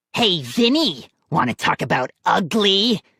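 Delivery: grating, harsh, raspy ventriloquist-dummy voice. Narrator reads Slappy calling out to Vinny, Slappy's harsh rasping voice. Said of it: "A harsh voice rasped".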